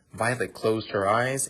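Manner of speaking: ordinary delivery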